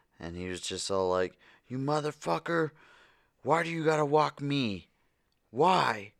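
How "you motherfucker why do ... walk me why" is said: loud, high-pitched hollering. Speaker retells a man yanking his dog on a walk, imitating a man yelling. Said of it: "he was yelling at it".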